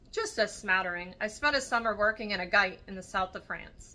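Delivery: ordinary delivery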